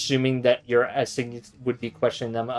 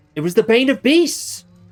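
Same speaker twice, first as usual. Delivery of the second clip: put-on excited yelling in a boy's voice; 12 semitones higher, 7 dB louder than usual. Voicing the little boy Leo answering a question: excited yell as a boy. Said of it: "excitedly, like, like, yells out".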